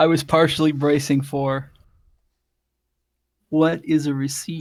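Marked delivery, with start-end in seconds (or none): none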